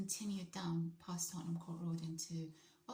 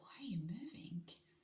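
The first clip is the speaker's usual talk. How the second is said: mock-bewildered, baffled voice; 3 semitones higher than usual. Retelling a man's reaction to the speaker dancing heavily, imitating a baffled question. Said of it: "in the most baffled voice".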